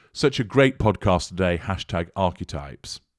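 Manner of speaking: plain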